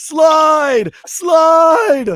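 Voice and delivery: very high, very loud, drawn-out scream. Asking a cousin about the stadium run, the speaker retells a crowd yell. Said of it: "one of the people yelling".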